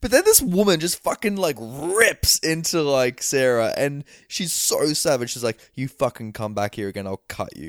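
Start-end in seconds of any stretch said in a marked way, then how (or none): 5.7-7.7 soft, quick, put-on sugary sweet menacing tone. Retelling how a woman threatened someone, mock sweet tone. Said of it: "she's saying it with such a sweet tone".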